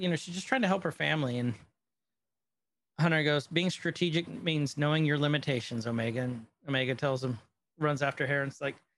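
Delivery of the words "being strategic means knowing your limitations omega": plain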